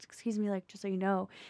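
imitated whisper. Retelling how a friend leaned in to warn someone: imitating a friend's whisper. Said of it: "leaned in and whispered to her".

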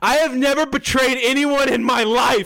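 indignant, stung, offended protesting tone. Retelling a scene where Char answers an accusation: imitating an upset Char. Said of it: "he gets very upset at the accusation".

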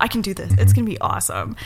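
ordinary delivery

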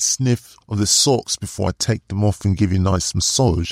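fake Australian accent, sounding British. Describing an imagined scene aloud, in an attempted Australian accent. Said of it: "that sounded more British than Australian".

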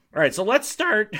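high voice breaking mid-phrase. After ending a rant, moving on to start, voice cracking. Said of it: "My voice cracked".

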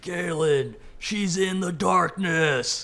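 very loud, high, shrill, booming dwarf shout. A player's character calls out, as another did earlier, yelling in a dwarven voice. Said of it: "yell in the same dwarven voice".

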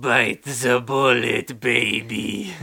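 very slow, lingering line, every word drawn out. Quoting a line from a TV episode: Jacques Renault impression. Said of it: "imitate Jacques Renault right now".

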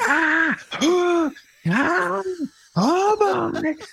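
put-on banshee wail. Retelling a stage partner's entrance as a grieving mother: imitating Anna's banshee wail. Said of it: "a banshee cry".

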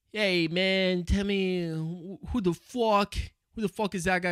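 fake Italian mobster-style accent. Retelling another person's bit about a mob boss on shrooms: put-on italian mob-boss accent. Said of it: "So he starts doing this Italian accent".

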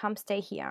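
plain

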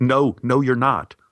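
urgent, pressing tone, cutting in abruptly. Retelling how Anne cut in at the desk: imitating quiet urgent interruption. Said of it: "interrupted me quietly but urgently".

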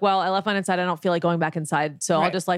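ordinary talk

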